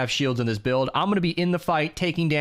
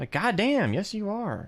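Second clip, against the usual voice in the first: ordinary delivery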